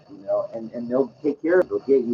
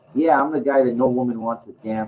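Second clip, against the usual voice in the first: ordinary delivery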